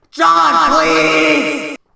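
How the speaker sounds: put-on screaming. Telling a story, acting out the cops calling to John, imitating cops screaming. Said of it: "They're screaming".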